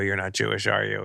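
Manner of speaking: normal talking voice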